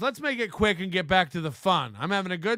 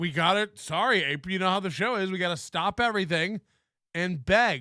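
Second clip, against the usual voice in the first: ordinary talk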